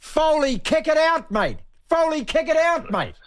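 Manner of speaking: very high-pitched, shrill screaming yell. Telling the other speaker what they screamed at the telly during the test, retelling screaming. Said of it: "what I was screaming at the telly".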